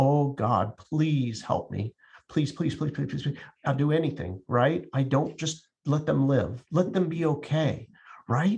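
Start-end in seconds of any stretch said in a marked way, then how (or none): 0.0-4.4 put-on desperate begging, faster. Describing how people typically pray when afraid, acting out desperate begging. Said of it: "we are begging someone else".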